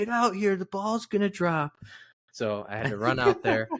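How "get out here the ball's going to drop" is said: mock very high, urgent shrieking scream. Retelling roommates calling out at eleven fifty-nine: imitating roommates screaming. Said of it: "screaming at me".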